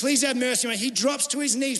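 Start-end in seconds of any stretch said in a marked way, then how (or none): 0.0-0.8 mock begging, pleading tone. Retelling the parable, a servant pleading with the king: imitating begging. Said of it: "He begs him".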